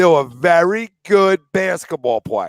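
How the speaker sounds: drawn out with spaced words. Asked to say the line one more time, just slower, speaking slowly. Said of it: "Slow it down".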